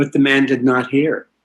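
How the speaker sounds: usual speaking voice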